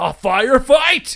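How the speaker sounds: hyped-up, high, loud, laughing.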